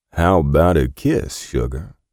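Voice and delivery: slow, lazy, unhurried drawl. A man speaks to a woman holding a pistol on him, drawling. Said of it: "he drawled".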